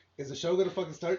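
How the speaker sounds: ordinary talk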